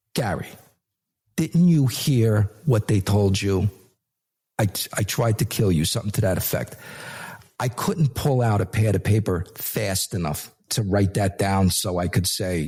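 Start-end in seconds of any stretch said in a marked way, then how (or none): 0.1-5.8 mock-deadpan, flat delivery. Quoting what the wife said to him: retelling a deadpan line. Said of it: "Deadpan delivery".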